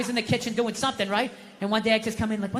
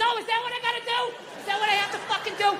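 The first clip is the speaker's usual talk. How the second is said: mock exasperated shriek, very high pitch; 12 semitones higher than usual. Retelling yelling at the tv remote: imitating his own screaming. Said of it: "Don't scream like that".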